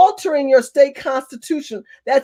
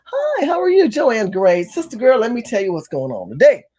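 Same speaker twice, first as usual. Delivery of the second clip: calm, controlled, sweetly polite voice, swooping pitch; 3 semitones lower than usual. Retelling talking calmly to a friend in a restaurant: polite "good Becky" voice. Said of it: "I'm talking in my best good Becky voice".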